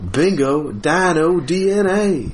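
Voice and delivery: high, cartoonish, animated narrator-style character voice. Joining in with a co-speaker who would do a dinosaur auction in this voice, Mr. DNA voice. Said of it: "the mr dna voice".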